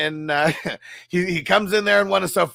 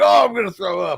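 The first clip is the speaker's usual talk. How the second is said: put-on drunk voice, higher and louder; 3 semitones higher, 4 dB louder than usual. Retelling a scene where Rafi comes in drunk, imitating a drunk Rafi. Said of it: "And he's like all drunk".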